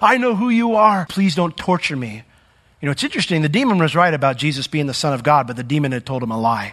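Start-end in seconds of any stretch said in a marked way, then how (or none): 0.0-2.2 begging, pleading voice, crying out. Speaker retelling a demon crying out to Jesus, acting out the crying out. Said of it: "he's crying out".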